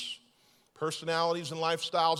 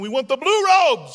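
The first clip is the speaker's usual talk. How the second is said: very loud, high, put-on bad Russian accent; 9 semitones higher, 11 dB louder than usual. Telling a true story about Russians fighting over robe colors, bad Russian accent. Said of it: "I don't think I do a good Russian accent".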